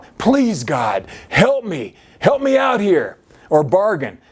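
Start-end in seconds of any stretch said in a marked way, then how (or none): 0.2-3.2 desperate, pleading, begging tone. Illustrating the begging kind of failed prayer, mock begging.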